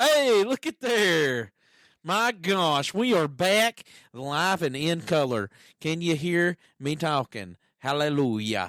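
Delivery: loud yelling close into the microphone. Speaker coming back live on air after a break: yelling into the mic. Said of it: "I was yelling into the mic".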